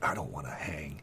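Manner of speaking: very quiet, very low, hushed, secretive half-whisper. Voicing a bandit arguing in a half-whisper about the guards: really low half-whispering. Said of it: "this really low whispering".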